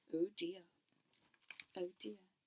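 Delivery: plain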